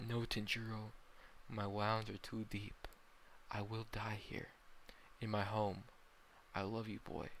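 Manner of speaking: plain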